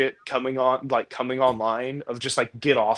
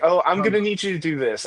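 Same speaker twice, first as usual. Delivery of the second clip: mock bossy, micromanaging voice, pitched higher; 6 semitones higher than usual. Imitating a micromanaging manager giving orders: imitating a micromanaging manager. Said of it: "She goes like".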